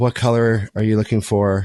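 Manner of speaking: exhausted, fed-up, annoyed and weary tone. Retelling asking Emily about Christmas plans: imitating own exhausted, annoyed tone. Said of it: "with that tone".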